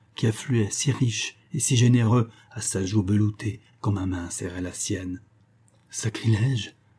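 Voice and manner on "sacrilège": murmured in a low, quiet voice. A man murmurs a single word in a low voice. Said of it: "murmura Hermann à voix basse".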